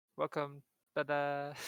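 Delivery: plain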